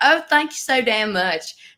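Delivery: put-on Southern US accent, words drawled out. Retelling a visit to Nashville, imitating a Southern US accent. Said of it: "Are y'all from the South?".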